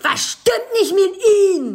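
very high, shrill, booming, very loud, drawn-out shout. Retelling how a police officer shouted at them, acting out the shout. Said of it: "der hat mich angeschrien und sagt".

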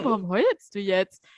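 put-on confused, puzzled tone. Retelling how a friend reacted to her crying, imitating a confused friend. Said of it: "guckt mich einfach nur so richtig verwirrt an und war so".

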